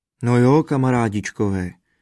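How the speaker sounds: ordinary delivery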